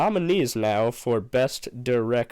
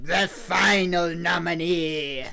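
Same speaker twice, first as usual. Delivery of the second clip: put-on sinister villain voice, higher pitch; 6 semitones higher than usual. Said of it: "as Palpatine would probably call it".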